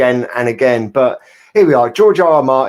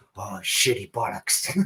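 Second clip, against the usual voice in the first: pained, hurt action movie star cursing; 5 semitones lower, 12 dB quieter than usual. Imagining an actor hurting his shoulder: Harrison Ford impression. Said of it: "that was my impression".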